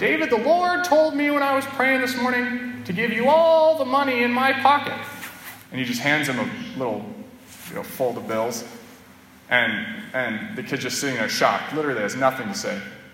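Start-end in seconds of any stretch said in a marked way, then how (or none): 0.0-5.0 put-on very high-pitched, comical old man voice. Acting out the monsignor coming over to David at breakfast, in Monsignor Leone's funny voice. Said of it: "he's got a funny voice".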